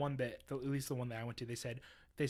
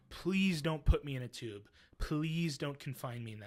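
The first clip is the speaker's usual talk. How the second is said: mock childlike sobbing with a pleading tone. Retelling panicking before an MRI machine, imitating sobbing like a child. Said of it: "I'm sobbing like a child".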